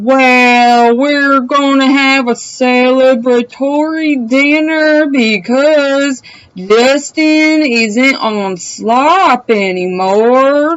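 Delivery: unhurried, very slow, drawn-out delivery. Retelling what a woman said, imitating her slow speech. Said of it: "she says it slower because she speaks slow".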